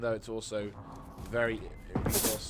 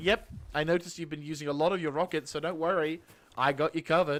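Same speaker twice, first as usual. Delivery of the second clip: high, loud, overly eager helpful voice; 5 semitones higher, 6 dB louder than usual. Acting out the game giving back rockets: mock-helpful game voice. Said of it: "He's like".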